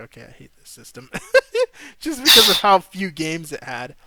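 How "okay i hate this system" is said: soft, whispered, fed-up grumble. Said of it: "which is when I really started being like".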